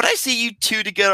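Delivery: put-on airheaded tone. Complaining about a movie, quoting a character's line in a mock ditzy voice. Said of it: "saying this in a ditzy".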